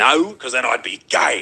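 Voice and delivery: put-on hostile, aggressive delivery. Retelling how this guy answered: imitating an aggressive tone. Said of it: "he said it in a very, like, you know, a-, aggressive way".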